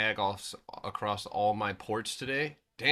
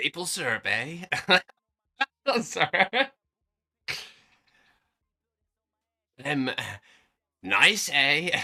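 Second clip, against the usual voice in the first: put-on Canadian accent, higher and louder; 6 semitones higher, 5 dB louder than usual. Asked to let them hear it, after needing a second, try a Canadian Trump impression. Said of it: "Let's hear Canadian Trump".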